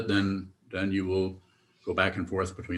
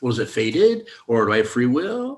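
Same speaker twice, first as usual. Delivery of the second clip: mock sarcastic, swooping, rising pitch; 5 semitones higher, 6 dB louder than usual. Mimicking how people ask about fate and free will: sarcastically mimicking a question. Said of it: "I'm being sarcastic".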